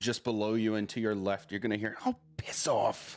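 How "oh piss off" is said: irritated, slow female voice. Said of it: "She sounds annoyed".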